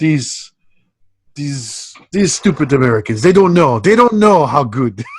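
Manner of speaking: put-on French accent in English. Speaker voices a French-accented character from the movie: put-on French accent. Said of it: "because he's got a French accent".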